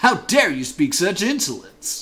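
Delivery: furious, loud, angry put-on character voice. Voicing a character's line about insolence in an angry character voice. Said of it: "It's fun to do that voice angry".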